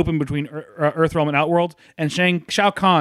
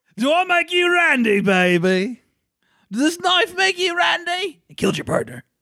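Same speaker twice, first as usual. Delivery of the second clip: put-on baby voice, very high and drawn out; 13 semitones higher than usual. Watching a fight, voicing the knife-wielding fighter in Austin Powers voice. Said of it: "Slowly turning into Austin Powers".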